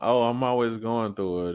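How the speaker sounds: acted, self-pitying, high, whiny complaining moan. Describing not wanting to always complain: imitating a sad person complaining. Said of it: "I just don't wanna be a sad person".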